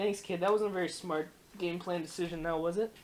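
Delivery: normal talking voice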